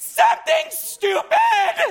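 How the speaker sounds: absurd, very high, slow yell, not shrill.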